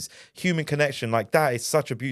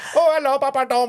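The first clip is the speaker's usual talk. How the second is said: very high, shrill, bad fake Indian Pakistani accent; 13 semitones higher, 6 dB louder than usual. Retelling how some fans greet him, in a bad Indian Pakistani accent. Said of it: "do the accent and sometimes it would be really bad".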